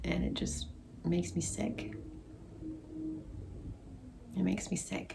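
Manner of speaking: soft voice, barely keeping the tears down. Giving an update to viewers, holding back tears. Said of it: "I'm trying so hard not to cry".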